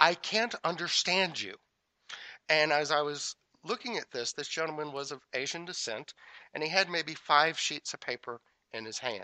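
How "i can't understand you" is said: officious, by-the-book bureaucratic clerk tone. Retelling a clerk speaking to the man at the front of the line: mimicking an officious tone. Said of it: "in this very officious tone of voice".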